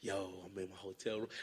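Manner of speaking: hushed half-whisper, under the breath. Retelling FaceTiming people from a fancy hotel room: imitating own past half-whispering. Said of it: "I don't even know I'm whispering".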